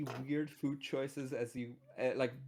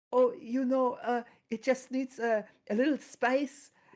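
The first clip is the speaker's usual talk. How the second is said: put-on very high, very loud Danish accent; 10 semitones higher, 8 dB louder than usual. Retelling what a friend said about ketchup on pizza: Danish accent. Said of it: "with his Danish accent".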